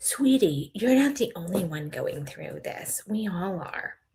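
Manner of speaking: condescending, patronizing, belittling tone. Quoting Cody calling Christine sweetie: imitating Cody, condescending. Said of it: "calls Christine sweetie condescendingly".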